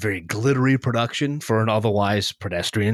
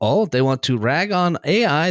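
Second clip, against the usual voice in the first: bad put-on Swedish accent, slow and high; 5 semitones higher, 3 dB louder than usual. Imagining what someone in a Swedish sound lab said, in a bad Swedish accent. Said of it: "That's not a Swedish accent at all".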